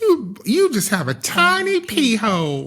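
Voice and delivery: put-on very thick country accent, slow and swooping. Retelling what the nurse said to her, in a thick country accent. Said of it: "like country accent".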